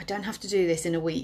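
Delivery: normal talking voice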